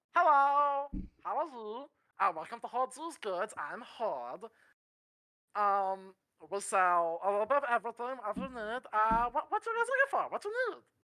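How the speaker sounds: goblin shopkeeper character voice. Voicing a goblin shopkeeper greeting the party: Stitch impression. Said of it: "me doing my best Stitch impression".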